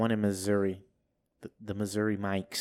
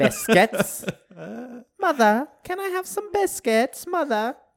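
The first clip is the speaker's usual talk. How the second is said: very high, loud fake English accent; 7 dB louder than usual. Speakers take turns trying accents; one shows his fake english accent. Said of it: "I feel like I'm transported to England".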